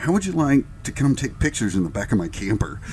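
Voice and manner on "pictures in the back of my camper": ordinary talk, nothing marked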